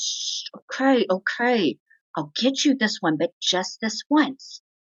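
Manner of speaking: embarrassed, giving in. Describing a child making a scene until the mother gives in: imitating an embarrassed mom. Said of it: "mom gets embarrassed and says".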